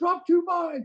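put-on commanding shout. Retelling giving orders as full commanding officer: retelling own yelled orders. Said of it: "I was yelling".

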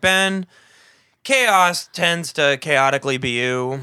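loud news anchor voice, heavily drugged delivery. Repeating another speaker's line back to him, in a mock-stoned newscaster voice. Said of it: "You're like".

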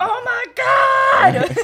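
piercing shriek, very high and very loud. Retelling a quarterback chased by a pass rusher: imitating Geno Smith screaming. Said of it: "I screamed into the microphone".

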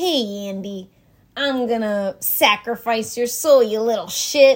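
put-on loud, taunting voice in a Chicago accent. Asked for the Chicago accent, doing the doll's line: Chucky Chicago accent. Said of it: "we need the Chicago accent".

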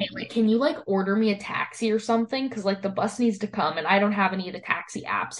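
ordinary talk

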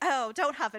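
put-on, loud, playful, jokey comedic delivery. Retelling a film scene where a character approaches a beast, imitating a joking, comedic delivery. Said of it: "she's doing it as a comedy".

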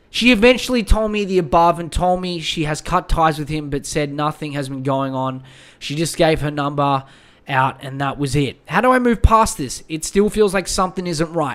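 ordinary talk

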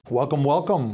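stiff, formal put-on voice. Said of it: "That sounded formal".

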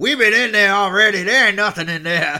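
wild, unhinged, crazy holler, high and very loud. Retelling a viral clip of a man coming out of a door: imitating a crazy voice. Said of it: "the guy with the crazy voice".

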